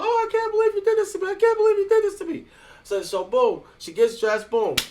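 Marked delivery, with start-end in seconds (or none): 0.0-2.4 put-on very high, distraught, sobbing crying voice. Acting out a distraught woman getting dressed to leave, imitating a woman crying. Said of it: "She's all crying and stuff".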